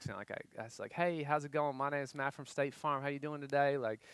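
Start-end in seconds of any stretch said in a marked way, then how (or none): 0.9-3.8 put-on Kentucky accent, played up and leaned into. Retelling how they spoke on work phone calls in Kentucky; put-on Kentucky accent. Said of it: "I got the accent".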